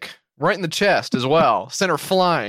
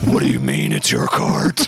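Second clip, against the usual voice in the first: very low, deep, confrontational tone.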